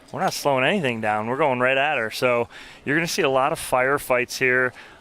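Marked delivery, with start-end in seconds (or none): none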